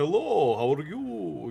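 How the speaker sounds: vampire voice with Transylvanian accent. Pitching Transylvanian dragons, trying a line as a dragon sounding like Dracula. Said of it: "make the dragon sound like Dracula".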